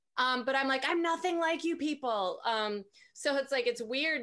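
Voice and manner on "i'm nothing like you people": put-on furious, high-pitched teenage yell. Retelling yelling at a mother at sixteen: retelling an angry yell. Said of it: "I yelled at my mother once".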